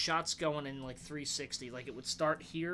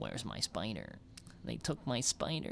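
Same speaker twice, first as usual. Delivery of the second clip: put-on voice like a little kid; 6 semitones lower, 4 dB quieter than usual. Quoting a bad movie performance exactly as it was delivered; Ezekiel impression. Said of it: "this is exactly how he says it".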